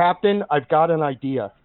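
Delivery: ordinary delivery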